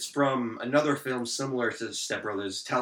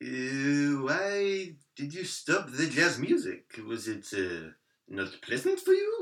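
put-on French-accented character voice; 3 semitones higher than usual. Playing a character in an acted scene: put-on French accent. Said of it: "I have a great French accent".

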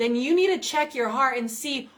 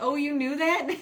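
mock laughing while speaking; 3 semitones higher than usual. Speaker retells another man's laughing reply, imitating someone laughing while asking. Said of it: "Alex is laughing. He's like".

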